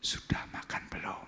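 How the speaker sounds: hushed, gentle, soft whisper. Illustrating how someone in love calls to another, whispered. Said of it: "memanggilnya pasti dengan berbisik".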